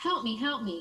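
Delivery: put-on shouted cry. Retelling a road rage incident at a stoplight; retelling a shout for help. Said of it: "I heard someone shouting".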